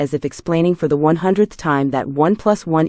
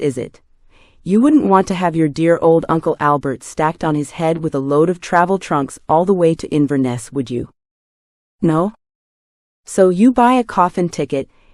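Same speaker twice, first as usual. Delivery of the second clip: ordinary delivery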